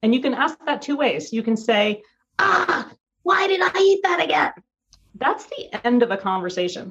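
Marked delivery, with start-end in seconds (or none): 2.4-4.5 mean, harsh, self-critical tone, very high. Showing one way to ask yourself about a food choice, in a harsh self-judging tone. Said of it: "judging yourself, being mean to yourself".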